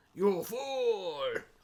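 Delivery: put-on "fool" drawn out in a Scottish accent. Echoing a quoted cartoon line: Destro voice. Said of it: "which is why Destro always talks like this".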